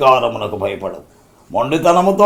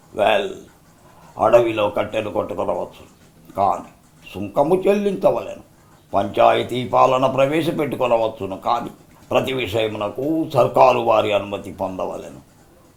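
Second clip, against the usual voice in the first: low-pitched British officer voice. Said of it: "వాళ్ళిద్దరు ఏ విధంగా dialogue చెప్పారు?".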